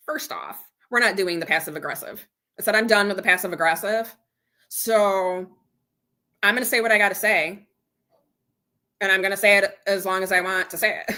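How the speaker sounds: usual speaking voice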